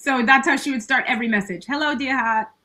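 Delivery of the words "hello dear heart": put-on hardcore Boston accent, laid on thick. Retelling how the speaker's mother started every message: imitating a strong Boston accent. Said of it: "she's from Boston, so she had a hardcore accent".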